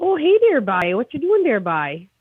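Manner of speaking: lively Newfoundland accent. Answering a live chat request to do an accent: Newfie accent. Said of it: "Newfie accent".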